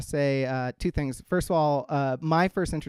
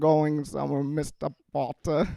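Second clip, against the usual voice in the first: slow, dragged-out drawl with thick, coated-sounding mouth. Showing how to do Alan Rickman with milky mouth residue: Alan Rickman as Snape voice. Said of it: "to do Alan Rickman".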